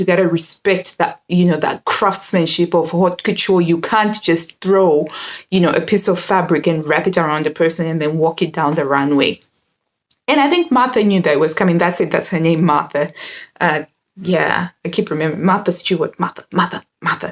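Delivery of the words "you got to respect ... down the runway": ordinary delivery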